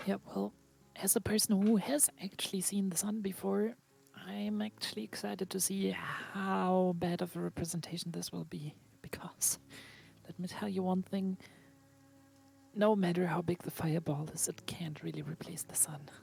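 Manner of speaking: hushed, quiet put-on whisper. Voicing Xora speaking to Carl while the parade float passes: whispering. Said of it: "Xora basically just whispers to him".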